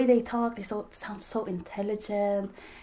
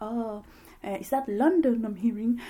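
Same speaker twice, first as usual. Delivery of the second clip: put-on English British accent. Retelling what he said to her, in a British accent. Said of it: "a British accent".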